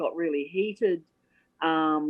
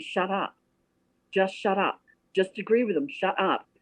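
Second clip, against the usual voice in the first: acted-out whisper. Retelling what a man beside him whispered to him, retold whisper. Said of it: "Alan starts whispering to me".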